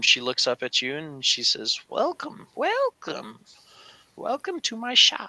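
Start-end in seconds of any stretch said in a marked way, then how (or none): 1.9-5.3 put-on very high, sing-song elderly shopkeeper voice. Narrating a role-play game, voicing an older shopkeeper greeting the player: old woman shopkeeper voice. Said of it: "how is the voices coming through".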